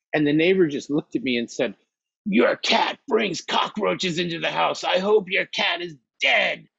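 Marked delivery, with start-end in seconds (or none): 2.2-6.5 mock half-screamed mild yell, high and rough. Retelling what a neighbor said at the door: imitating someone screaming. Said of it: "he screamed at me like that".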